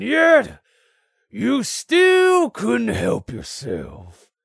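contemptuous, slow, swooping, loud, drawn-out sneer. Narrator reading a swordsman's line to his nose-to-nose opponent, sneering. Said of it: "he sneered".

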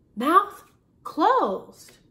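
loud, high-pitched, commanding voice. Narrator reads Mrs. Shot's order to Mrs. Toggle, ordering. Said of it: "ordered Mrs. Shot".

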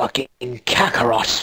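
put-on anime warrior prince character voice. Noticing your voice sounds like Vegeta while talking, you try a line, Vegeta voice. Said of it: "when I talk like this, I feel like I'm talking like Vegeta".

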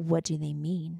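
play-acted dead-level deadpan, soft and flat. Retelling how a woman asked about the tattoos, imitating her monotone. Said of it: "Just like that".

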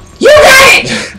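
very high, loud scream. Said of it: "It's like screaming every time".

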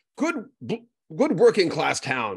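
put-on heavy English accent. Quoting his mother-in-law from Manchester, in her thick English accent. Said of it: "in her thick English accent".

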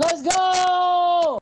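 screaming at full voice. Reacting to a fantasy football trade with a friend, screaming. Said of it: "you need to stop screaming".

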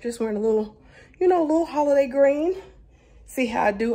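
out of breath. Recording a video while on the way, speaking out of breath from running around. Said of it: "I'm out of breath because I've been running around".

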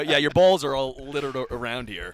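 normal talking voice

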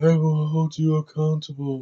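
hammy delivery, every word overplayed. Mocking an actor's delivery in a movie review: imitating Eddie Redmayne's hammy delivery. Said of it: "this is how he talks in half the movie".

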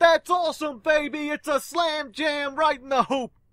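very high, loud, bombastic over-the-top sportscaster hype. Describing a bombastic announcer, then imitating Dick Vitale's bombastic announcing. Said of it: "being really bombastic. Be like".

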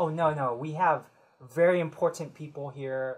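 ordinary delivery

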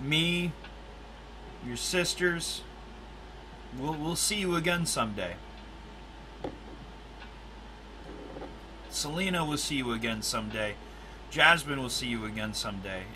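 soft, deeply moved, emotional voice. Speaking to the late Elijah about seeing him again, getting emotional. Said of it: "I'm getting emotional right now".

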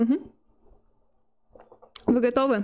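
soft chewing while speaking. A streamer eats gummy candy while waiting for a match, chewing softly while talking. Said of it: "Ты слишком как-то слабо чавкаешь".

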